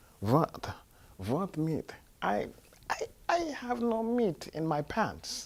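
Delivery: put-on very slow, heavy, thick Eastern European accent. Quoting a man in a story, thick Eastern European accent. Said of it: "this man also had a very thick accent. He was from Eastern Europe".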